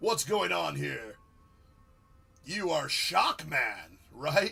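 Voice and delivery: silly animated cartoon banana voice. While controlling a character in a game, sounding like the banana. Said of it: "I sounded like the banana right there".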